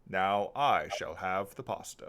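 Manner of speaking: deep, slow, loud, drawn-out booming villain voice. Voicing a masked bird character at the table: Darth Vader voice. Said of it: "a Darth Vader voice comes out of Hemlock's mask".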